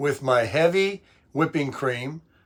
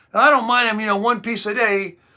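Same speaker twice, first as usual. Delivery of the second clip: put-on Italian accent, pitched a bit higher; 7 semitones higher than usual. Quoting Raffaella, who bakes the cakes, answering the speaker: Raffaella's Italian accent. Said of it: "she got that Italian accent".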